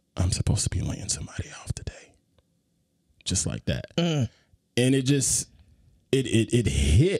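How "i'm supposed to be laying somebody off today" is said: whisper, quieter and faster. Retelling what a man said to him after their greeting, retelling a whisper. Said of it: "in a whispering tone".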